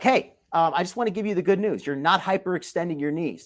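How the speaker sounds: ordinary delivery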